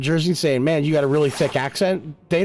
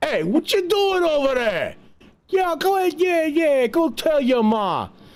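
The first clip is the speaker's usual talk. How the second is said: put-on tough, aggressive, very high New York accent; 11 semitones higher than usual. Speaker describing regional accents, imitating New Yorkers, aggressive New York accent. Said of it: "New York City has a very aggressive accent".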